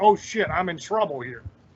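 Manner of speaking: normal talking voice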